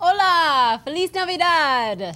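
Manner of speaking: fake Spanish accent with a stretched, drawn-out "Hola". Greeting the audience in Spanish: put-on Spanish accent. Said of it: "But the accent was dead on".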